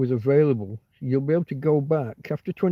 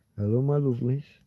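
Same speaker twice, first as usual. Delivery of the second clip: honeyed, sweet, lovely voice; 3 dB quieter than usual. Imitating a maths presenter's greeting: imitating a lovely voice. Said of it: "she says it in such a lovely voice".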